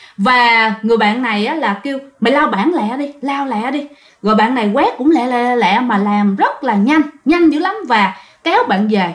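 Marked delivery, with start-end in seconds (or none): none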